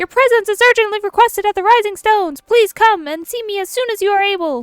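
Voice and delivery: shrill, very high, very loud shouting. Reading a game character's call aloud, yelling in Tataru's voice. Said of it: "Tataru, calm down".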